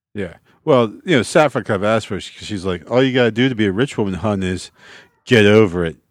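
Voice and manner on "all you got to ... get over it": condescending, arrogant, smarmy, self-satisfied sweet tone. Retelling a character's line from the show: arrogant smarmy Saffron voice. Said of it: "in her very arrogant, smarmy way".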